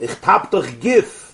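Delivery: put-on Polish-accented pronunciation. Telling a joke, repeating the son's words in a Polish accent. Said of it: "in the Polish accent".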